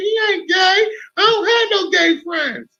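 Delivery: voice shot up very high in pitch. Retelling answering their mother about a school friend, voice going way up. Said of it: "as my voice went up ten octaves".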